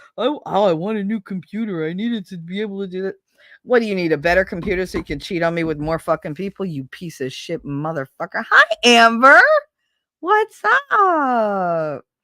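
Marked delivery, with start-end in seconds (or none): 3.7-8.5 fast, furious ranting outburst, temper lost, torrent. Ranting about an ex-husband, in an angry rant. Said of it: "that's me losing my my cool".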